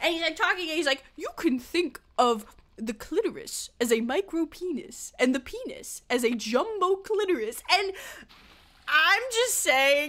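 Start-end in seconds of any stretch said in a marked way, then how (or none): 1.2-7.6 put-on slow narrator voice with a British accent. Retelling a line from a sex ed video's narrator: David Attenborough type voice. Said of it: "like, David Attenborough type voice".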